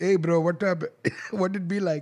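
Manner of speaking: put-on, movie-style Indian accent. Recalling a pimp character from Bachelor Party, imitating an Indian accent. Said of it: "There was an Indian pimp. He says".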